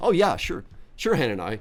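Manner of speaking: mockingly sarcastic tone. Acting out how Jeremiah answers Hananiah, mock-sarcastic as Jeremiah. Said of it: "in sort of a sarcastic sort of way".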